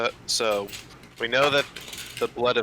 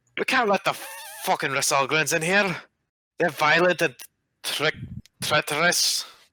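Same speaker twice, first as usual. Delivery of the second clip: put-on dwarf accent, higher pitch; 6 semitones higher than usual. Voicing a dwarf customs officer refusing the humans entry: dwarf accent. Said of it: "Cannot say that in that accent".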